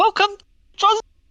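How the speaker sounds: very high, loud put-on welcoming voice. Asked to do a known welcome line, putting on a high-pitched greeting voice. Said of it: "I gotta put the right voice on".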